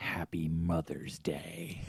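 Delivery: carrying, projected stage whisper. Retelling how his wife woke him on Mother's Day: imitating a whisper.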